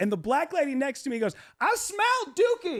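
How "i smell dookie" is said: put-on yelling, higher pitch. Retelling what a passenger next to them said: imitating someone yelling. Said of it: "And she's yelling it".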